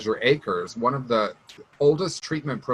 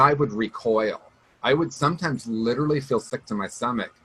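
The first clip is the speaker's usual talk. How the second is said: ordinary delivery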